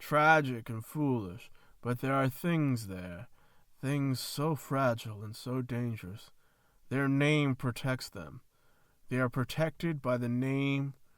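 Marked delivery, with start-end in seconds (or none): none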